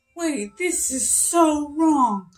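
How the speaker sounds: put-on flustered, panicked dismay, slow, alarmed. Retelling opening a package that was wrong: retelling own panic. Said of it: "I just was totally panicking".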